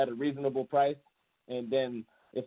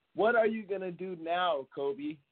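put-on, high-pitched, taunting heckling call; 5 semitones higher than usual. From the crowd, yelling at a player walking past: retelling a loud yell. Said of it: "I yell out as loud as I can".

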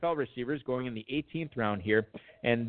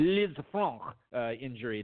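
heavy, hardcore French accent, laid on hard. Retrying the injury name, this time in a hardcore French accent. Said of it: "I need to go more hardcore French accent for the Liz Franck injury".

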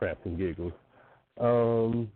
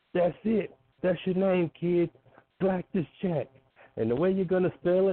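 put-on thick, laid-on New Jersey accent, pitched up; 8 semitones higher than usual. Retelling how Bill DeMont laughed and handed out a name, do Bill DeMont's thickest New Jersey accent. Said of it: "in the most New Jersey accent that he could possibly have".

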